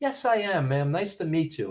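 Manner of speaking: mock friendly, warm, gracious, courteous tone. A woman asks if he is Nikolai Volkov, and he answers; imitating Nikolai Volkov's gracious greeting. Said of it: "so warm and friendly and gracious".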